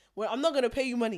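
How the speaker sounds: loud, shouted, yelling voice. Retelling how the taxi driver yelled at a window cleaner: imitating a driver shouting. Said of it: "shouting at him".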